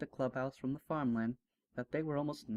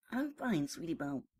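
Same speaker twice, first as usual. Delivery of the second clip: higher hiss through clenched, gritted teeth; 3 semitones higher than usual. Narrator reading a story, Scootaloo answers Sweetie Belle, hissed through clenched teeth. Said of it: "Scootaloo hissed through her clenched teeth".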